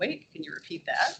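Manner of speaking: ordinary talk, nothing marked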